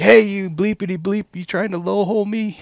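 play-acted, very high, loud hollered yell. Retelling how a dude below the bank yelled up: imitating someone yelling. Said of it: "this dude yells up at me".

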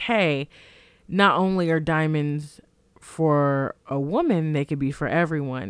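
ordinary delivery

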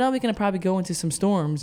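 quick airline pilot announcement voice. Speaker retells what the pilot said on the flight, in a pilot voice. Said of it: "that's my pilot voice".

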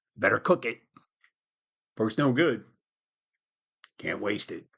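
put-on frontier settler pioneer voice. Speaker talking about eating a whole package of bacon, in a pioneer voice. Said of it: "that's my pioneer voice".

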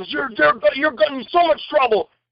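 imitated yelling. Retelling what a man in the crowd shouted at him, retelling a man's yell. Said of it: "he's yelling".

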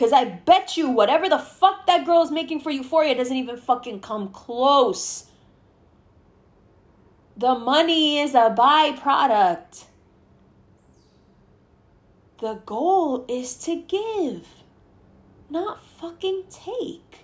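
slow, irritated, exasperated, annoyed tirade. Arguing that an actress gives to her audience, annoyed. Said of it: "I'm sorry if I sound annoyed".

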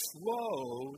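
emphasis on "slow". Leading listeners in repeating a phrase, stressing the word slow. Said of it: "We're going to emphasize the word slow".

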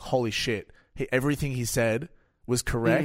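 ordinary talk

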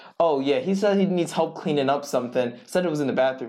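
plain

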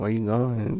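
imitated sad voice. Retelling how a friend sounded on the phone: imitating a sad friend. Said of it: "he was sounding so sad".

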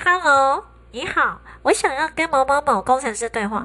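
nose held shut, disguised. Recalling phoning to ask for an engineer, disguising the voice by pinching the nose. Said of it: "就是捏着鼻子，然后想办法变身".

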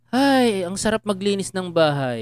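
heavy, slow, drawn-out tongue-in-cheek sarcasm. Acting out a remark about cleaning the house: imitating a sarcastic remark. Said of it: "Parang sarcastic".

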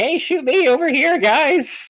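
very high, loud, flute-like voice. Describing a character moment, the speaker quotes him in a flute-pitched voice. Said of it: "flute pitched voice".

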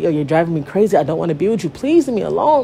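acted tearful crying voice. Speaker recalls begging a man to leave her alone, reenacting crying and begging. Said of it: "Begging this man to leave me alone".

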